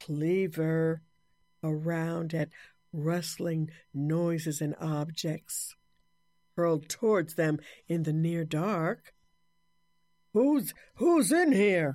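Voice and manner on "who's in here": loud, high, booming voice with a tremble. Swinging a cleaver in the near dark, a man calls out, booming and quivering. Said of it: "He boomed and quivered".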